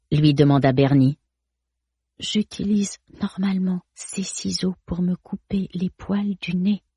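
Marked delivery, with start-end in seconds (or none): 2.2-6.8 soft, hushed half-whisper under the breath. Reading a story, a narrator voices a character answering a question, half-whispered.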